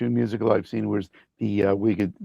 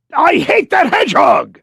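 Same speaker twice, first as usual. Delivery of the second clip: shrill, very loud, high, full character voice shout; 12 dB louder than usual. Answering a listener's request for a line: Eggman voice. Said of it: "Can you give us a line from any game or show you were in, Eggman".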